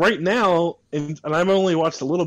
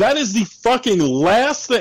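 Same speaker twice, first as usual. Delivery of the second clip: loud raised voice, much higher and slower; 6 semitones higher, 4 dB louder than usual. Ranting about the message a show sends to people contemplating self-harm, getting loud. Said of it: "I'm sorry I'm getting loud".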